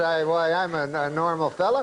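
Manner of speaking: ordinary talk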